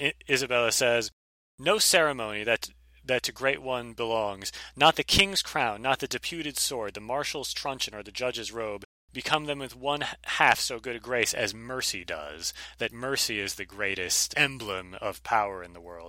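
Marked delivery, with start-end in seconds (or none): none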